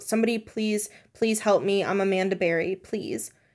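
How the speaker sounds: ordinary delivery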